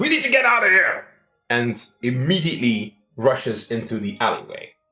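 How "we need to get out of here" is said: very high, shrill, fast urgent yell. A player voices his character seeing guards rushing toward him, shouting. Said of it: "he shouts".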